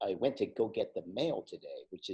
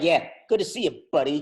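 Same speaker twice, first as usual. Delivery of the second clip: mock-sarcastic put-on voice; 8 semitones higher, 14 dB louder than usual. Acting out how someone says a sarcastic "buddy" when parting, imitating a sarcastic "buddy". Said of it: "a more sarcastic buddy. if you'd, you're like".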